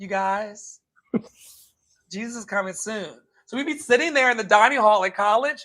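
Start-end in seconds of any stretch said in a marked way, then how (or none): 0.0-3.1 zombie voice, hushed. Retelling a campus woman going table to table in the dining hall, zombie-like voice. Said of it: "like a zombie from the apocalypse would say".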